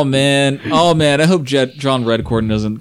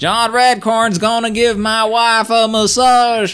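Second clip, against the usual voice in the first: very high-pitched, flat monotone voice; 10 semitones higher than usual. Joking with others on a couch: Dale Gribble voice. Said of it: "talking like Dale Gribble".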